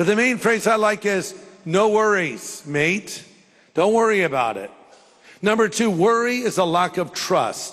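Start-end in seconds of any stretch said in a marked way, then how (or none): 1.6-3.2 failing put-on Australian accent. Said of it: "my accent's falling apart as I do it".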